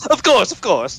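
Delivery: very high, playful peasant character voice. Joking about playing peasants at an event, put-on peasant character voice. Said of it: "with that kind of voice".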